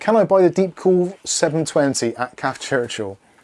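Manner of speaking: ordinary talk, nothing marked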